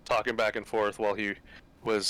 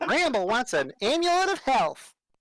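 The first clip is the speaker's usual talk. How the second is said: very high, tiny, swooping sing-song chipmunk voice; 4 dB louder than usual. Talking about themself in third person, the speaker speaks as Bramble: Bramble gnome voice. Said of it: "That's a really good voice".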